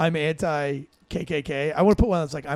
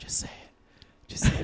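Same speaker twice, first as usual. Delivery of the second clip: soft, breathy whisper under the breath. Retelling what she said she'd whisper at his last words: imitating someone whispering. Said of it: "I'm just gonna be whispering".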